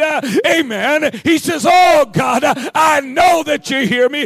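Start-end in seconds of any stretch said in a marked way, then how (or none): 1.7-4.2 fervent, prayerful crying out. Retelling how Elijah called on God: imitating crying out. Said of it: "he cries out to God".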